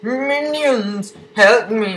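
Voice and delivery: very high, squeaky villain voice. A gamer voices a villain calling on minions, sounding like Plankton. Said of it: "Why do I sound like Plankton?".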